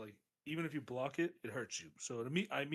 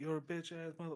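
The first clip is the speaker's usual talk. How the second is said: sore-loser ranting, yelling voice; 3 semitones higher, 5 dB quieter than usual. Retelling a game opponent heard through the remote, imitating him yelling. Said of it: "he's yelling at me through the remote".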